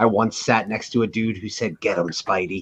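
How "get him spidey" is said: deep-voiced cheer, voice dropped low. Retelling what a moviegoer said during the film: imitating a low voice. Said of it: "in a low voice".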